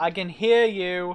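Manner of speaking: loud, shouted voice. As Echo, answering a loud call down the hall, shouting back. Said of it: "Echo shouts back".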